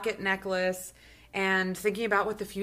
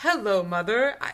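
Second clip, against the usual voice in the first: stiff, robotic put-on character voice; 4 dB louder than usual. Co-hosts mocking how a character talks to his mother; stiff robotic Ethan voice. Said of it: "He's like the Ethan robot".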